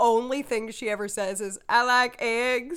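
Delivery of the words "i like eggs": put-on Southern accent, slower pace. Describing a skit character from The Amanda Show, in a southern accent. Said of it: "in like a southern accent".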